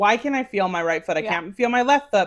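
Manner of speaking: normal talking voice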